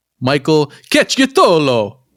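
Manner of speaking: name rolled out in a put-on Italian accent. Announcing a name so as not to butcher it, in a put-on Italian accent. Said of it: "I got to do an accent for this".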